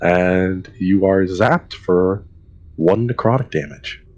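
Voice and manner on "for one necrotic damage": ordinary talk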